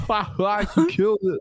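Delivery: put-on shrill, very high, slow hysterical laughter. Recalling how someone laughed from the very start; imitating Colby's hysterical laughing. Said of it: "laughing hysterically from the very start".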